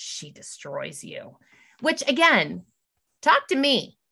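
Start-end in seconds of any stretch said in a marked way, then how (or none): 0.0-1.4 very quiet, breathy whisper, barely voiced. Retelling what the teacher said to Chloe: imitating someone whispering. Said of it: "whispers to her and she says".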